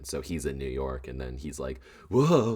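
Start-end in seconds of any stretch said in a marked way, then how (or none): 2.1-2.6 very high, loud, booming superhero-style call. Acting out a cartoon hero reacting in a montage: Spider-Man impression. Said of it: "That's a really good Spider-Man impression".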